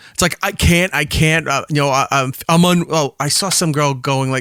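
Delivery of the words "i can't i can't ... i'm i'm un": mock emotional breakdown, overcome with feeling. Retelling reaction videos of people getting engaged: imitating someone overcome with emotion. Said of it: "reaction videos of people just getting emotional".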